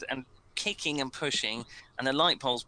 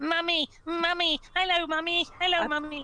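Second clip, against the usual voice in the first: put-on very high, eerie, taunting, laughing children's voices. Voicing creepy children on poles taunting a player: creepy children laughing. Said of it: "laughing at you, going".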